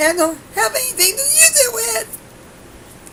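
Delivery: high, slow, mock wailing lament.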